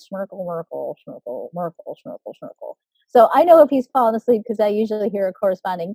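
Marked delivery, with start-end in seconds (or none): 0.1-2.8 droning, very soft, low, dead monotone sleepy mumble. Imitating Dad reading a story while falling asleep, in a sleepy monotone mumble. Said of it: "it sounds something like this".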